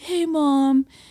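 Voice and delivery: sleepy, just-woken voice. Retelling a son answering his mom's call at seven, imitating someone just woken up. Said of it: "clearly in bed".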